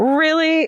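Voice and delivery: thick, mocking sarcasm. Reading aloud the teacher's reply: dripping with sarcasm. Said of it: "it says it's dripping with sarcasm".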